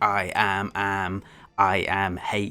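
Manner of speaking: flat robotic voice. Describing how the original audiobook voiced the villain, doing a monotonous robotic AM voice. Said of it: "a very monotonous, robotic voice".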